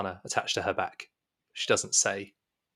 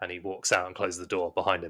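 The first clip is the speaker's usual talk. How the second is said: plain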